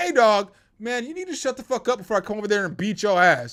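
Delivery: heated, hot-tempered, angry tone. Retelling what he said to a man yelling at him, as a heated threat. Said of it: "Because I'm heated".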